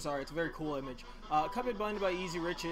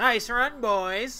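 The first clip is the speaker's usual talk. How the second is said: loud, high-pitched cartoonish voice, belted out; 7 semitones higher, 8 dB louder than usual. Reading a story aloud, voicing the devil's line in a Roger from American Dad voice. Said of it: "That sounds like Roger from American Dad".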